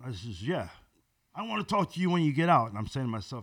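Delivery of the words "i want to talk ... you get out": put-on high, hostile, confrontational challenging tone. Speaker retelling a guy at the far end of a bar calling to him, imitating a hostile voice. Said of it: "that guy sounds hostile".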